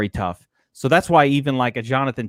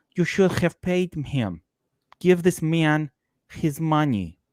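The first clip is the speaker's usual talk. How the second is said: character impression voice, pitched higher; 3 semitones higher, 4 dB quieter than usual. Doing a Teddy KGB impression, later praised by another speaker. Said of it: "your excellent, by the way, just phenomenal um, impersonation of K G B".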